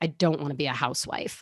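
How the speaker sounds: play-acted, scornful, flat, dismissive tone. Retelling what she said a couple times, imitating a disdainful tone. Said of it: "almost with disdain in her voice".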